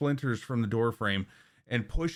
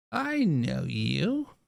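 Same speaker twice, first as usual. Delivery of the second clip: put-on creaky, rough-edged elderly woman's voice; 3 semitones higher than usual. Game master voicing the woman who answers a knock, older lady's voice. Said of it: "an older lady's uh, voice".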